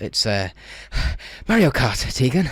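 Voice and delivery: very slow, drawn-out, out-of-breath voice. Answering a joke question as the Doctor: Fifth Doctor impression. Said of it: "my Fifth Doctor impression".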